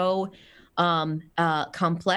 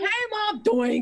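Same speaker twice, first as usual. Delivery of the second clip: very high put-on pet dog voice. Retelling the dog in a cone bumping into things: voicing her dog. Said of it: "So she's just like".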